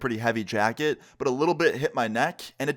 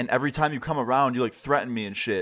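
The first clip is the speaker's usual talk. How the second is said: usual speaking voice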